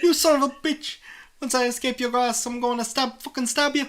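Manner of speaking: shrill, very high put-on Irish accent. Voicing a character in a made-up story, in an Irish accent. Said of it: "Irish voice, come back to me".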